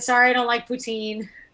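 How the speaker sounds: ordinary delivery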